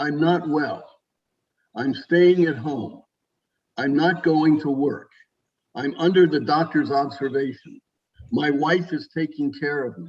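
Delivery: frail, worn-out, very weak, feeble speaking voice. Retelling a phone call with an older man, imitating Joe's weak voice. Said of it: "in a very sort of weak voice".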